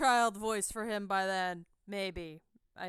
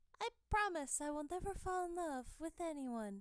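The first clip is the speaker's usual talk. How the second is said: put-on tiny, very soft, hushed, high-pitched child voice; 6 semitones higher, 10 dB quieter than usual. A streamer voices young Sakuya speaking to Mikoto, baby Sakuya voice. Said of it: "Should I just do the Nanami voice for baby Sakuya?".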